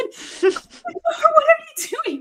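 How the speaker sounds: very high, startled, frightened shriek. Retelling her husband opening the door at midnight: retelling her own scream. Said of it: "I'm screaming".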